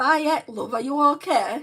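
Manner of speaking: put-on Yorkshire accent, very loud and high. Speaker trying to show how someone from Leeds or Yorkshire would talk, put-on Yorkshire accent. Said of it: "how would I talk if I'm from Leeds or Yorkshire?".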